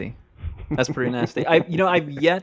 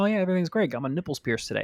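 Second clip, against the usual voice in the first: bubbly, super happy voice, higher and quieter; 4 semitones higher, 6 dB quieter than usual. Retelling a new coworker's greeting at her shift: imitating someone bubbly and super happy. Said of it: "bubbly, super happy".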